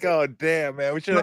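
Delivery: regretful, rueful tone. Retelling hearing the coach's halftime talk: imitating own past regret. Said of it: "I was like".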